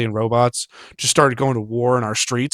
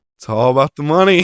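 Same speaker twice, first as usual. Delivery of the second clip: acted couldn't-care-less tone, loud and blunt; 3 semitones higher, 5 dB louder than usual. Retelling an actor's answer to an interview question: imitating an uncaring reply. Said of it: "not giving a single fuck, just goes".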